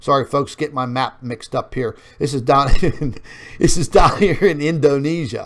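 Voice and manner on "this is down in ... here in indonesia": louder, laughing through the words. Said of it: "Sorry to be laughing about that".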